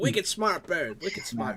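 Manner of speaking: put-on Boston accent. Joking about a smart bird in a bad boston accent. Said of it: "my accent was bad".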